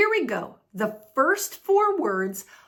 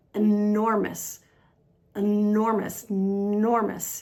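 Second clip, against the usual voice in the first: enormous with middle syllable stressed, said slowly. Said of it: "The stress is on the second syllable".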